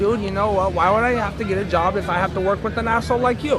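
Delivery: ordinary delivery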